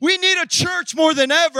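full-voiced yelling in a preacher's style. Preacher addresses the congregation about how much the church is needed. yelling. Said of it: "I'm yelling".

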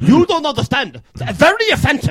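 put-on Indian accent. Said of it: "Do your best one".

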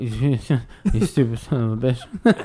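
put-on drunk old man voice. Mocking a man in a video clip talking to a reporter, imitating a drunk old man. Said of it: "He sounds like a guy that's either really old or really drunk".

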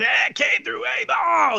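mock rough, hoarse rock-style cry, very high. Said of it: "he starts yelling".

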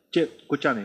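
quick, hurried, rapid, rattled-off everyday talk. Imitating how people talk when they speak faster: rapid delivery. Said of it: "hablan más rápido".

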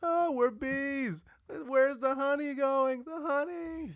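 bad, exaggerated, very high, slow, stretched-out comic drawl. Doing an impression from the bee movie: Jerry Seinfeld voice. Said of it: "That's how he sounds".

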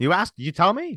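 high, sarcastic mocking tone. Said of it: "And it's like".

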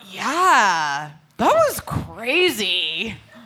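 dopey, oblivious, loud, slow, careless drawl.

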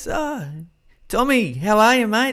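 very high, eager, slow, drawn-out voice. Acting out Des cornering a player in the hallway: imitating Des. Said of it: "Des appears and goes".

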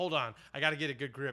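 ordinary delivery

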